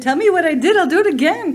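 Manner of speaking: playful, high, loud teasing with laughter.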